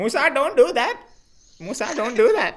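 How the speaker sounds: high, loud scream in English. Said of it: "she screams at me like".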